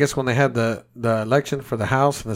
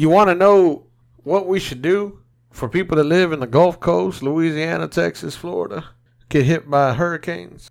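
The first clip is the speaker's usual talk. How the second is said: put-on Southern politician voice, pitched higher; 4 semitones higher than usual. Imitating a politician asking about hurricane victims: Bill Clinton voice. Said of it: "you're making him sound like Bill Clinton".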